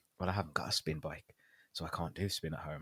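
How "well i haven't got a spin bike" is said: ordinary delivery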